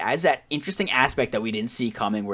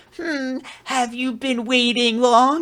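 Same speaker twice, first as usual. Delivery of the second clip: very high, very slow, drawn-out teasing, mocking tone; 14 semitones higher, 6 dB louder than usual. Retelling a sibling mocking another character: imitating a mocking character. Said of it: "that mocking".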